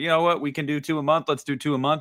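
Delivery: plain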